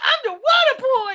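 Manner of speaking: very high, very loud, dragged-out cry, belted slowly. Answering a request to do the Water Boy voice: Adam Sandler Water Boy voice. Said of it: "remind me what his voice sounds like in that movie".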